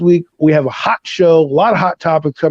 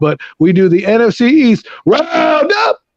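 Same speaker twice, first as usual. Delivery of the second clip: slow, high voice cracking mid-phrase; 6 semitones higher than usual. Speaker introducing the show he does with a co-host, voice cracking. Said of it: "my voice just cracked there".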